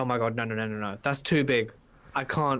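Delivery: ordinary delivery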